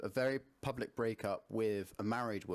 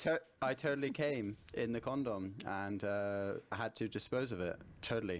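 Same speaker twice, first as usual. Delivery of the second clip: plain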